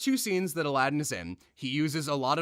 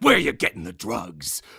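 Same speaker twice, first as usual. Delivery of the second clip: low, loud, rough, menacing, threatening action-movie voice; 4 semitones lower, 6 dB louder than usual. Pitching the action-movie way of breaking in on Herbert, threatening interrogation. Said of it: "scare the crap out of him and threaten his life".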